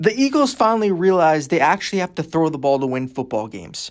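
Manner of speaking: ordinary delivery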